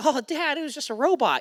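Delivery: put-on very high, childish little-kid voice. Retelling what they said to their dad as a child, imitating their own high young voice. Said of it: "with my high voice at that age".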